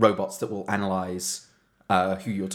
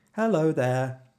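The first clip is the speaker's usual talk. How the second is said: pitched-up fake robotic automated phone voice; 8 semitones higher than usual. Retelling how a call center worker pretended to be a robot: imitating a fake robot voice. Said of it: "he would pretend to be a robot".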